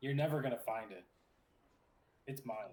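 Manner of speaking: soft whispering. Voicing a character who looks over at a player: quiet whisper. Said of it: "gets a little quiet and whispers".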